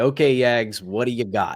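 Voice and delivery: ordinary talk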